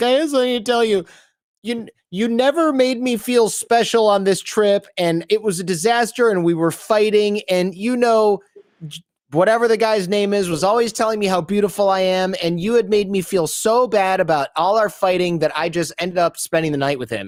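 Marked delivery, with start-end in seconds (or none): 0.0-15.9 high, weepy, tearful crying voice. Retelling what a woman told a man on a trip, imitating someone crying. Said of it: "she's like crying and she's like".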